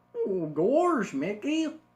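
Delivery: loud, high, swooping cartoon voice, belted. Showing a learner phrases to practice in the voice: Goofy voice. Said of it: "You could be like".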